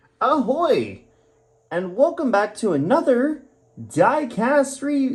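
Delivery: very high, slow, overexcited gushing teacher voice. Opening a diecast model review video: like an overly excited Sunday school teacher. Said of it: "I sound like I'm a freaking overly excited Sunday school teacher".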